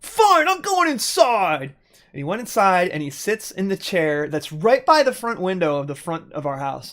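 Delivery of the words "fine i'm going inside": play-acted fed-up anger, very high and drawn out. Retelling the seeker quitting and going inside: imitating someone angry. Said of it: "He gets so mad".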